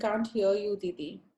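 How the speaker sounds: ordinary talk, nothing marked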